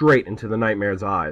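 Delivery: plain reading voice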